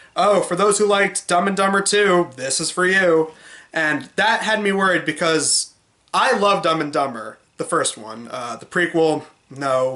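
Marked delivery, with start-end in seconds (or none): 0.2-3.4 dry, mocking sarcastic tone. Retelling what someone said when sharing the trailer: imitating a sarcastic remark.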